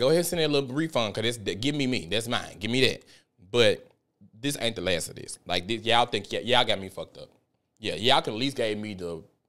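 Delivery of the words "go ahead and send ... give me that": usual speaking voice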